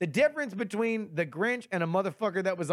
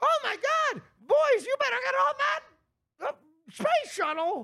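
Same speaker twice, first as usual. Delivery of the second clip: very high elf character voice; 3 dB louder than usual. Imagining how Buddy would react to a meteor: Buddy voice. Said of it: "Buddy, who's like".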